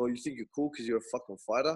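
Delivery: mock snide, sarcastic, mocking jibing tone. Retelling what locals say to a fighter: imitating sarcastic locals. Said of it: "start being fucking sarcastic".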